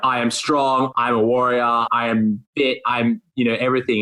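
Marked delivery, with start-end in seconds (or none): none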